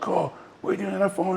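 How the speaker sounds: mock very high, furious, angry yelling. Retelling how an ill man suddenly shouted at everybody: imitating someone shouting. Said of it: "he shouted".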